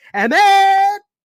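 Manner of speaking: loud, high-pitched scream.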